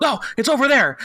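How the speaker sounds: high, mock, way overexcited blurt. Retelling spotting a Walmart turn-in at three AM: imitating own too-excited voice. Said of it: "probably in too excited of a voice".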